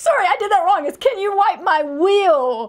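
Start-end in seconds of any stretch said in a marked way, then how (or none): 1.0-2.7 put-on child's scream, higher, louder. Retelling how a small boy called to his aunt: imitating a child screaming. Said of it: "Robbie screams at the top of his lungs".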